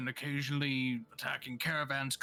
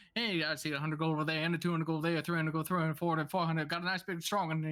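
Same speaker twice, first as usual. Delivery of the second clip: super-fast auctioneer voice; 2 semitones higher than usual. Voicing the guy with the gavel at an auction, fast auctioneer voice. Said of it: "the guy with the gavel who's talking super fast".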